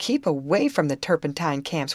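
ordinary talk

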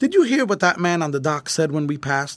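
plain

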